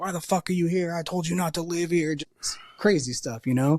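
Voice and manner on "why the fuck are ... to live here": mock angry yelling. Acting out the speaker's mom walking in the door and yelling at the speaker: imitating mom yelling. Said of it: "she just starts yelling at me".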